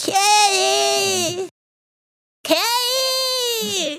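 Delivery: put-on very high, shouting toddler voice. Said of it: "it cries out".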